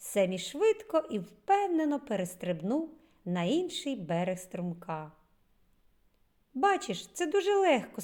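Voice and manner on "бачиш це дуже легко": friendly, encouraging, higher pitched. A narrator reads a character who has just jumped a stream, said with a smile. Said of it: "сказав Семмі, усміхнувшись".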